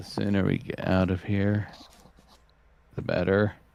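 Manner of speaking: low, quiet muttering under breath. A player speaks in character, muttering under her breath. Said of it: "You hear Arya muttering under her breath".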